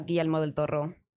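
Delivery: Spanish accent on the name. Naming a favourite director while answering a question: Spanish accent on the name. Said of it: "you just had to say it with that, with that accent".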